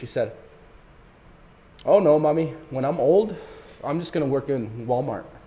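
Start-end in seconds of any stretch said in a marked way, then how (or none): 1.8-5.2 put-on resigned, long-settled, matter-of-fact tone. Quoting a child's answer to her mother, retelling it in a matter-of-fact tone. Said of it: "she said this with this tone like she had realized it a long time ago".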